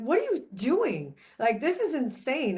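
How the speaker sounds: angry scolding outburst, swooping pitch. Retelling confronting an agent who missed his kid's games: retelling yelling at someone. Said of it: "I literally yelled at him".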